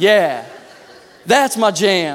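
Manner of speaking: very slow, drawn-out street swagger drawl.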